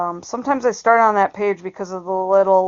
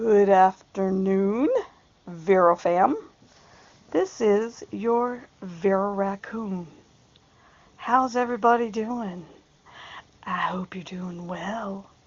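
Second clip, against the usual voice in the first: deliberately eerie, soft, unsettling, creepy put-on voice; 5 dB quieter than usual. Host greeting the channel's viewers, creepy voice. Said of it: "This is my creepy voice".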